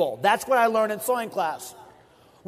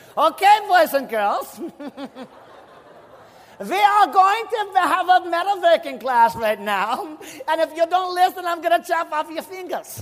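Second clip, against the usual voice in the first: put-on German-accented voice, raised pitch; 7 semitones higher than usual. Retelling what the metalworking teacher said: imitating Mister Zawissa's German accent. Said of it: "he even had a German accent".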